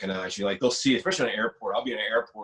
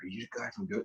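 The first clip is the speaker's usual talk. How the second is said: put-on whisper, quieter; 11 dB quieter than usual. Retelling how an older stranger in a store line asked: imitating someone whispering. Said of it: "he's whispering".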